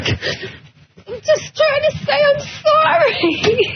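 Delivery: laughing and crying together. Apologizing on air while others tease her: laughing and crying. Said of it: "She's crying".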